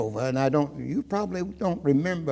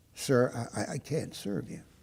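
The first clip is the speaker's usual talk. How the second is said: put-on stuttering, stammering voice, quieter; 3 semitones lower, 8 dB quieter than usual. Retelling a waitress refusing to serve: imitating a waitress stuttering. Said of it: "she would start stuttering".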